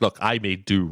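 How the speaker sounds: normal talking voice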